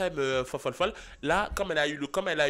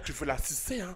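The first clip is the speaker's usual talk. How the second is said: put-on slimy, leering, lecherous dirty-old-man voice; 4 dB quieter than usual. Imitating how Tristan talks, like an old pervert: Tristan's leering old-pervert voice. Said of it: "Tristan il parle comme hey, un vieux mec pervers".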